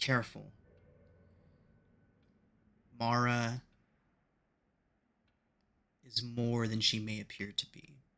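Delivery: quiet, ghostly, disembodied voice drifting away. Game master voices Theodora's disembodied voice to the group, Theodora's voice fading away. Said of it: "disembodied voice of Theodora slowly fading, getting quieter".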